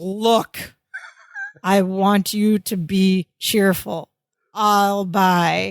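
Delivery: very slow, grave, serious, deliberate voice. Speaker retelling a TV scene where one man grabs another by the shirt, retelling a very serious line. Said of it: "he says in a very serious voice".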